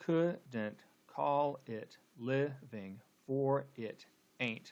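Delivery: slow scanned reading, leaning on every stressed syllable.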